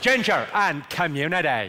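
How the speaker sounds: Belfast accent. Speaker teaches the crowd a phrase for getting the accent right: Belfast accent. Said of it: "get the Belfast accent right".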